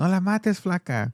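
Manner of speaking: put-on Chinese-accented Spanish. Retelling what the mom's husband said while she held a gun: imitating a Mexican Chinese accent. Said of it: "like a Mexican Chinese accent".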